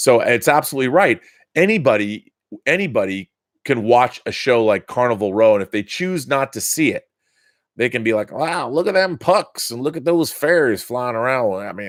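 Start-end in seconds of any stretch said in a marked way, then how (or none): 8.3-11.5 high, weird, exaggerated Southern accent. Voicing a hypothetical Carnival Row viewer, the speaker uses a weird Southern voice. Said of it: "I'm I'm I'm doing like some weird Southern voice".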